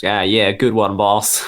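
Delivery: put-on New York gang henchman voice, thick New York accent. Imagining a gang member answering another's joke, in a thick New York accent. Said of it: "sort of New York accents".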